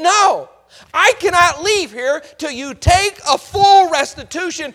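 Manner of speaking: loud, high-pitched, insistent shout.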